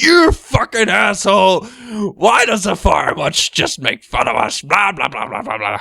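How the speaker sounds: put-on angry ranting. A speaker imagines a forum member's angry message; mock-angry rant. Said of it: "He'll probably write an angry message".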